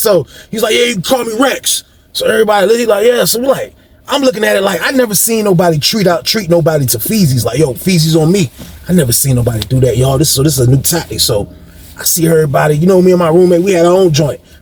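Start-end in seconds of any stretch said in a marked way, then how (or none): 0.7-1.8 put-on slight Italian accent, pitched up. Retelling what a man said to the group, imitating Rex's slight Italian accent. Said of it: "he talked like a like a Italian dude slightly".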